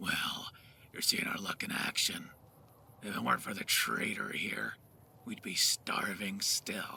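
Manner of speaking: rasping ghoul character voice. A voice actor demonstrates the rasp technique with a mod character line, raspy ghoul voice. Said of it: "So, let me show some footage of that real quick for a character I voice known as [name]. / Well, you gotta learn a technique known as rasp. / Check out the mod I voiced as a Ghoul".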